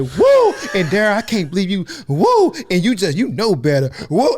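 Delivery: acted-out swooping, scolding mom voice between exclamations. Retelling how mama sounds when she gets mad: imitating mama getting mad. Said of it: "all I hear my mama be like".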